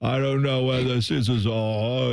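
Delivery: befuddled, muddled, lost rock-star dad voice. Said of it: "he's just like".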